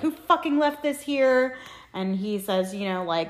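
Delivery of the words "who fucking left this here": put-on scream, higher. Retelling a stage scene where the father screams at the mother: imitating someone screaming. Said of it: "fully screaming at each other".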